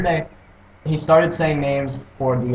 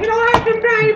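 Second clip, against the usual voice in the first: put-on high-pitched British woman voice, higher. Quoting a cartoon duck's line: high-pitched British woman voice. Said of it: "supposed to be an high-pitched British, British woman".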